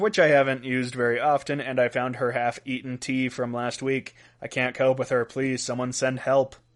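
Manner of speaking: ordinary talk, nothing marked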